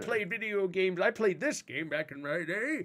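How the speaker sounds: put-on elderly man voice. Talking about playing video games back in the day, in an old man voice. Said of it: "I'll do it in that old man voice too".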